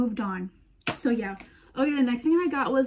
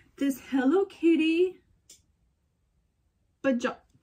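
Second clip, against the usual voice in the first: hiccuping while talking, higher pitch; 5 semitones higher than usual. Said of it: "excuse me, I have hiccups".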